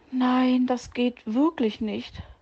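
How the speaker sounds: faint, weakened breath. A sick fox answers the bird fetching him tea: breathed weakly. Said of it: "hauchte Herr Fuchs geschwächt".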